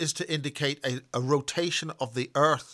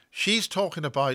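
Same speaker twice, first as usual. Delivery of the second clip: usual speaking voice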